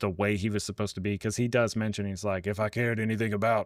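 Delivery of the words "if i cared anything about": put-on stiff superhero voice. Describing a movie character, quoting him: imitating Mister Terrific. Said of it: "sorry for that impression".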